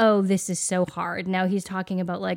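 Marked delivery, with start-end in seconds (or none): 0.0-1.3 put-on put-upon, complaining little kid voice. Retelling what a three-year-old says when things get tough: imitating a three-year-old complaining. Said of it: "He's like".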